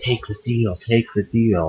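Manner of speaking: soft, hushed, repeated half-whisper under the breath. Voicing a worried onlooker urging someone to take the deal: half-whispering. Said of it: "they're kind of trying to whisper".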